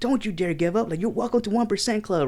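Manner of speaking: put-on coach voice, high, fierce motivating scream. Retelling coaching a gym client during interval training: imitating himself screaming. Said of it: "I'm fucking screaming".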